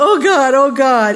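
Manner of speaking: high, loud, desperate crying out. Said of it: "Same words, but different emphasis, crying out to God".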